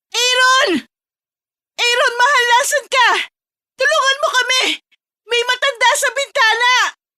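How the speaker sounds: loud scream, loud shout. [name] calls to her husband Aaron for help, with a loud scream. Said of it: "ang malakas na sigaw ni [name]".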